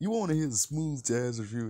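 high, riffing voice. Explaining the riff just done: imitating Tony Baker. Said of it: "Tony Baker going like".

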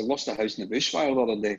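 plain

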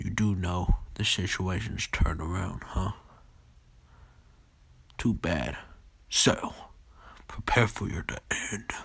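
speaking like a demon. Voicing a character's lines: demon-like voice. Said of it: "I sound like a demon".

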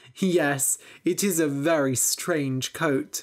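plain reading voice

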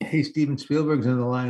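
plain

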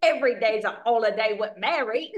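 horrific, bad, fake put-on Cockney accent. Discussing the chimney sweep's accent, a speaker quotes his lines: horrific Cockney chimney-sweep accent. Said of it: "his horrific accent".

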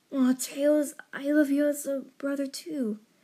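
tender, gentle, hushed and very soft. Sonic comforts the crying Tails, rubbing his tail, speaking gently. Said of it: "Sonic spoke gently".

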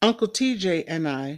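plain

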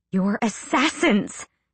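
growled, snarling. She answers Sam after his excuse, growling at him. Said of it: "she growled at him".

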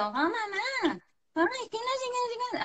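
put-on very high, swooping, whining child voice. Speaking to parents about a complaining child, imitating a whining child. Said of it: "el niño que se queja".

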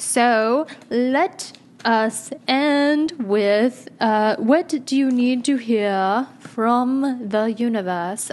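very bad, slow, fake British accent. Speaker wrapping up for listeners, in a very bad british accent. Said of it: "I started talking in a very bad British accent".

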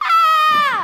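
screaming. Acting Mary startled by George in the library: screaming. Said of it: "Why are you screaming?".

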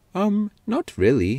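sincere, earnest, very high-pitched voice. Answering another's question about wanting a different job, earnest. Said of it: "said Paxton earnestly".

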